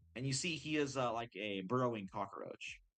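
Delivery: plain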